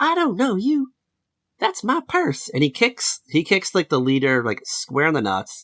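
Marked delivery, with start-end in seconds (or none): 0.0-2.5 very high-pitched yelled line. Retelling a cartoon scene where the boy shouts his line: imitating Bobby Hill shouting. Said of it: "he shouts his line".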